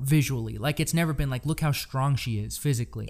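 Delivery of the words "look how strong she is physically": plain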